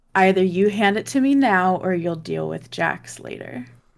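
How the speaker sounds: dead straight, deadpan delivery with no emotion. Speaking in character, looking straight at her: deadpan. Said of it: "deadpan look at her and say".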